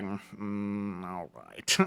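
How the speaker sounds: begrudging, reluctant tone. Acting out a character's reply to an invitation for a drink: begrudging.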